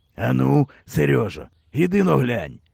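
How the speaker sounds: plain reading voice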